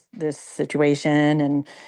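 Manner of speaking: ordinary talk, nothing marked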